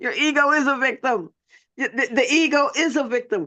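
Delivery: giggly, laughing, stumbling mid-sentence. Reacting to a viewer's comment while reading it: laughing while talking. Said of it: "I'm sorry, I'm laughing".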